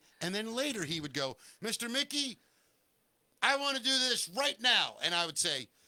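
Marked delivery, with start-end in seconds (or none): 1.6-5.0 voice pushed very high in pitch. Retelling what Owen once said to him: imitating Owen. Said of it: "can I do an impression of you".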